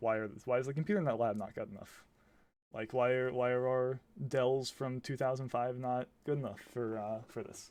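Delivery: ordinary talk, nothing marked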